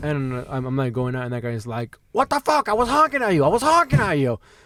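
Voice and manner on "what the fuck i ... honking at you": put-on very high, animated, swooping Cuban accent. Retelling a fender bender, quoting the other driver in a Cuban accent. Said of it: "but in a Cuban beautiful accent".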